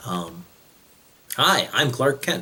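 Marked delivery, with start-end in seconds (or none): 1.4-2.4 meek voice, pitched a bit higher. Showing how the voice changes when in disguise: Clark Kent voice. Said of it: "and I talk like this".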